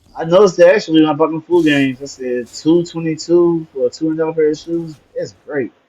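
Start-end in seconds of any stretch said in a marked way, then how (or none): 2.5-5.7 extremely sarcastic, laid on thick. Retelling own reaction to a shoe price: retelling own sarcastic remark. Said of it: "I mean the most sarcastic way possible".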